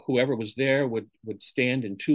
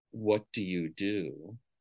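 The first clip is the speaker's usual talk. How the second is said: low, soft, sultry, seductive voice; 4 semitones lower, 6 dB quieter than usual. A speaker recalls a guy coming up to ask a question; mock-sexy voice. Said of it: "said in a very sexy voice".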